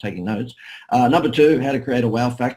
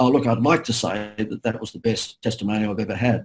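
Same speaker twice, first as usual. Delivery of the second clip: plain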